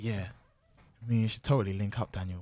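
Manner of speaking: put-on sensual whisper. Retelling what a woman whispered to him at a bar: imitating a sensual whisper. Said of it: "she then whispers to me".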